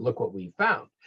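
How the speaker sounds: ordinary delivery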